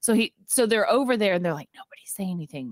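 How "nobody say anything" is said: whispered, very quiet, barely audible. Retelling a scene where the crew must stay silent: imitating a whisper. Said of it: "like they whispered".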